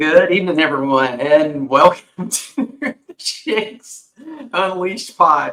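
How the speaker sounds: slow speech broken by laughter. Welcoming everyone to the pod, laughing while talking. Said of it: "I'm laughing at Bill's face".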